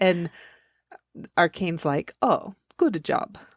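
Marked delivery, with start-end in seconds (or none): 2.2-3.3 put-on Russian-ish accent. Retelling what Arcane said after the books were brought, imitating Arcane's accent. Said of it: "With his accent".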